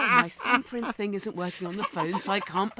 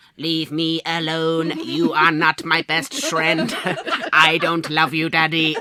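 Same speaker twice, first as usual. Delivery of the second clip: put-on child's robot voice, louder; 9 dB louder than usual. Retelling what a three-year-old says to Daddy: imitating a child's robot voice. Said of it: "says things in a robot voice".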